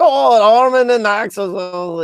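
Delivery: put-on German accent, very high, very drawn out. Retelling how a man replied to your comment, imitating his German accent. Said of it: "he replied in his German accent".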